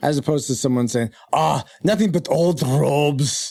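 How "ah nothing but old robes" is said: slow, horrible put-on Scottish accent. Mocking the show's caricatured accents: caricatured fake Scottish accent. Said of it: "Why don't you get a real Scottish guy in here?".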